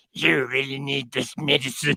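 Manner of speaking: slow, villainous, openly wicked coaxing voice. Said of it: "really obviously evil voices".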